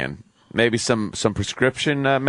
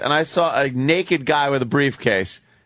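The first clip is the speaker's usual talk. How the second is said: ordinary talk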